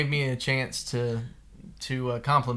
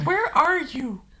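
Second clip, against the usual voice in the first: mock very high little-girl yell; 4 dB louder than usual. Repeating their daughter's call: imitating daughter yelling. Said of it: "our daughter yelling".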